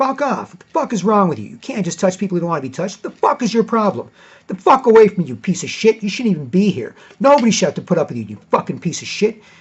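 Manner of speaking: loud, shrill, furious, angry yell. Retelling yelling at an old man who grabbed his shoulder: retelling a yell. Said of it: "I yelled at him".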